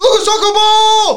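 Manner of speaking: imitated kid's shout. Asked to repeat it, imitating a kid's sudden yell. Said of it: "Do it again. The yell".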